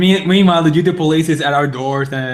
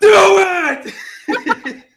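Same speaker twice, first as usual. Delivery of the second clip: very high, furious, puffed-up put-on angry voice; 3 dB louder than usual. Acting out a scene with Shia LaBeouf running in: angry Shia LaBeouf impression. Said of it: "all angry and puffed out".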